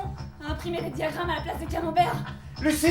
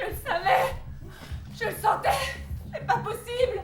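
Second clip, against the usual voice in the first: tearful crying voice, much higher pitched; 6 semitones higher than usual. Someone reacts as another bug appears; crying. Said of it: "ne pleure pas".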